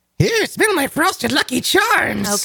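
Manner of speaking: words squeaked out, very high pitched. Voicing the dog who smells the previous dog, in Lucky Charms leprechaun voice. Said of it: "He sounds like the leprechaun from Lucky Charms".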